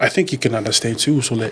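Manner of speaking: ordinary delivery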